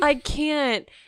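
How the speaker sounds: put-on pitiful voice. Retelling the partner's words while changing a diaper: imitating someone sounding pathetic. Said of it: "you were just pathetic".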